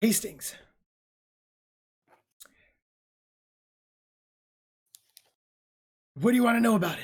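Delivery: little sigh, then speaking. Narrator voicing a character who answers a question, sighing a little. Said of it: "He kind of sighs a little bit".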